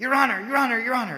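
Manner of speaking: put-on panicked yelling. Recounting how a man in a courtroom shouted to the judge: retelling a panicked yell. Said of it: "he started yelling".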